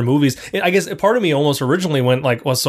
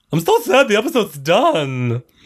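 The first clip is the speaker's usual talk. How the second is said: animated, high, sing-song, swooping character voice; 6 semitones higher than usual. Saying the episode is done: Fred Wynn voice. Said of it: "Why do you sound like Fred Wynn?".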